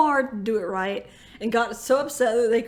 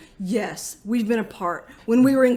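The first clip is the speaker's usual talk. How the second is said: mock deadpan, straight-faced tone; 3 dB louder than usual. Retelling how she answered his question, imitating a deadpan answer. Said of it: "just like straight face".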